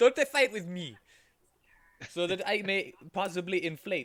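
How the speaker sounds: very loud, high, bad put-on French accent. Voicing a character taunting the others: bad french accent. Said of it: "You are so bad at bad French accents".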